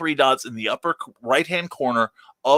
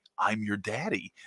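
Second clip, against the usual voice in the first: very gentle, hushed and low soft voice; 5 semitones lower, 12 dB quieter than usual. Imagining a Star Wars-like scene with Nita hanging from a railing: imitating Carl's very gentle voice. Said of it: "Carl's very gentle voice is like".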